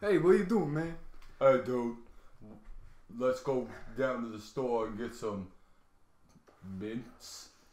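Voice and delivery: put-on loud, thick Brooklyn accent, laid on heavily. Describing a movie scene where Batman is possessed, Batman in thick Brooklyn accent. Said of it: "speak with like a thick Brooklyn accent".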